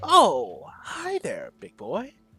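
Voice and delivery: very drawn-out, slow, swooping sassy drawl. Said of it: "really sassy looking".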